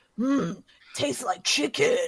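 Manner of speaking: quiet, hushed mutter under the breath. Voicing a character speaking under her breath: Batman voice. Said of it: "That was Batman".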